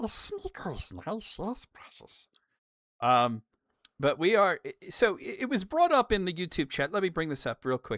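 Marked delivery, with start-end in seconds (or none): 0.0-2.3 put-on creature voice, going up high. Talking to the chat about The Return of the King, doing a Smeagol voice. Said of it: "You love me a bit of Smeagol".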